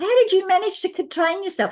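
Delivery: very high, blokey, admiring tone. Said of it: "you've got to say it in your own blokey way".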